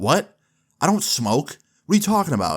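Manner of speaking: put-on defensive tone. Retelling a reply to a joke at dinner: imitating a defensive denial. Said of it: "And I got really defensive".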